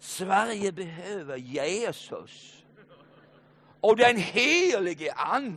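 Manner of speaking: put-on Scanian Swedish accent. Retelling what a man answered when a pastor questioned him; broad Scanian accent. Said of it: "på bred skånska".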